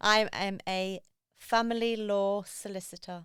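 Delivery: very slow, deliberate, drawn out word by word. Asked who she is, she states her profession, said really slowly. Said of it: "I said that really slowly".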